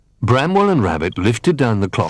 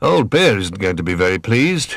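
ordinary delivery

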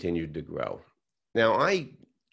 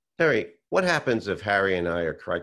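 ordinary talk

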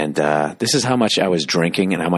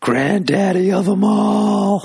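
acted-out drunk slur, very high pitched, all drawn out; 3 dB louder than usual. Retelling a video of a drunk buddy looking at the camera, imitating drunken slurring. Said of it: "he sort of slurs".

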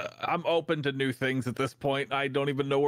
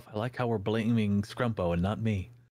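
put-on quiet muttering, lower and faster; 4 semitones lower than usual. Recalling the group blaming scrumpo, retelling a quiet aside. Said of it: "I just quietly to myself".

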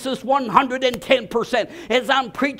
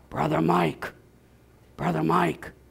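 soft, half-whispered call; 8 semitones lower, 5 dB quieter than usual. Retelling a phone call from Bill Aragoni: imitating someone half-whispering. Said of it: "He's whispering".

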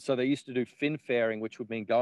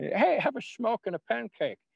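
put-on Dutch accent, pitched very high; 11 semitones higher than usual. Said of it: "He talks like that".

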